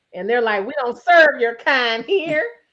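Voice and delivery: ordinary talk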